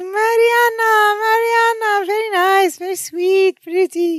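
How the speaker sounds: very high-pitched, excited, slowly drawn-out voice. Retelling a sitcom scene where Mama greets Marianne: imitating Mama. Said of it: "So she's like".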